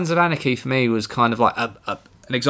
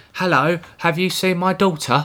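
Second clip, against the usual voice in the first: mock English accent; 5 semitones higher than usual. Mocking an actor's accent from a trailer: Dexter with stereotypical English accent. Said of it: "doing a, a stereotypical English accent".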